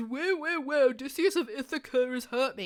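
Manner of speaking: mock tearful, crying, blubbering complaining voice. Retelling Polyphemus running to his dad: imitating Polyphemus crying. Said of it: "Polyphemus has run to his dad crying".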